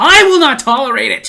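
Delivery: loud, mock-stern scolding tone.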